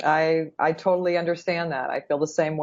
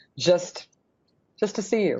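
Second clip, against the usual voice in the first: choked up with joy, voice catching. Telling a friend what they mean to you: choked up with joy. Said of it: "it's not choking up of pain".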